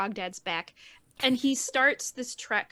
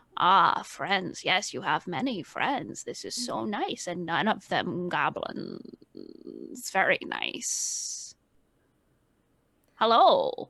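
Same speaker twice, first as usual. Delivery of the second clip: deep gravelly voice, low and drawn out slowly; 5 semitones lower than usual. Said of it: "deep, gravelly, almost [name] voice".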